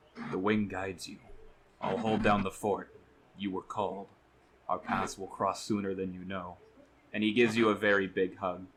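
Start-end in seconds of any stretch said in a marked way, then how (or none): 0.3-6.6 whispered, close and soft. Voicing a character who leans in to a player's ear, whispering. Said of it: "he goes to whisper in your ear".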